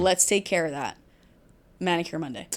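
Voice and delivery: plain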